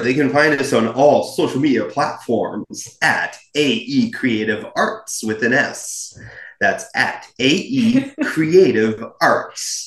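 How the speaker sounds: put-on radio announcer voice. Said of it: "Like my radio voice?".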